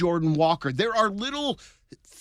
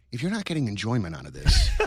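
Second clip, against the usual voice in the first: put-on sly tone, pitched lower; 6 semitones lower than usual. Imitating the speaker's psychiatrist talking about time spent watching games: imitating a sly psychiatrist. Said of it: "it would be very sly".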